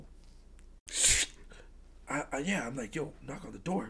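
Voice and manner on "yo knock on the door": low, hushed, spooky scary voice. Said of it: "that's supposed to be my scary voice".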